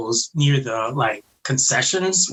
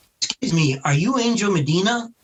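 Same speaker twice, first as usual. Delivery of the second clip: put-on simple broken English with Japanese accent, pitched up; 5 semitones higher than usual. Retelling how an interviewer approached at a table: imitating broken English. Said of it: "she comes up to me in broken English".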